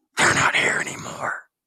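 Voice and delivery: eerie, creepy, deep, breathy stage whisper. Retelling what a person who had just blacked out said: creepiest deep voice. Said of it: "in the creepiest deep voice".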